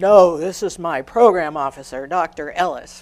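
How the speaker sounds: full, weighty voice dripping with disdain. Retelling a colleague's reply to the organizers: imitating Yuli's disdainful big voice. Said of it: "with great disdain in that big voice of his".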